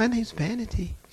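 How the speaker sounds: modest, sweet, demure lady's voice. Retelling what a demon said when asked its name: imitating a sweet, demure voice. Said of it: "She sounded just as sweet and demure".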